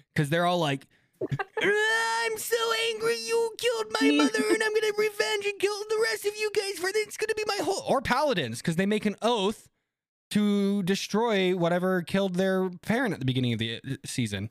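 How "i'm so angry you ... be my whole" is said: very high-pitched anime protagonist voice. Mocking typical anime main characters out for revenge: anime protagonist impression. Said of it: "That was a very accurate anime protagonist impression".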